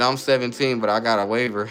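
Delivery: ordinary talk, nothing marked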